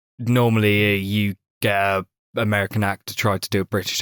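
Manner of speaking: ordinary delivery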